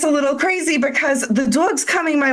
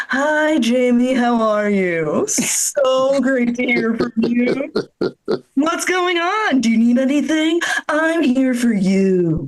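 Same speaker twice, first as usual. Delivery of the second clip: put-on, sugary, friendly, fake-nice phone manner. Speaker acts out answering jamie's call, in a fake-nice phone voice. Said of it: "I change my voice when I'm talking to people".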